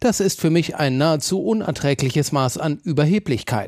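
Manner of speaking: ordinary delivery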